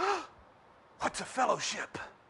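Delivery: put-on, high, startled, shocked, half-afraid voice. Retelling a lady at work asking what a fellowship is, mimicking a shocked, semi-afraid voice. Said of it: "in a shocked and semi-afraid voice".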